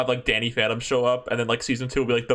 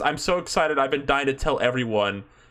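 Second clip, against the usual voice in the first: ordinary delivery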